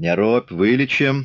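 jeering, scornful, taunting tone. Reading a novel, a Cossack rising from the table answers a bleeding man: mocking. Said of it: "Насмешливо сказал приземистый казак".

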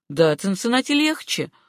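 ordinary delivery

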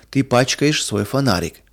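ordinary delivery

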